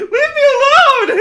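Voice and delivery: piercing, very high, loud shriek. Telling what happens after you knock on a door, acting out a woman screaming. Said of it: "like she's screaming".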